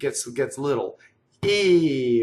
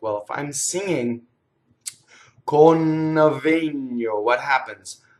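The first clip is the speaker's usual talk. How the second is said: plain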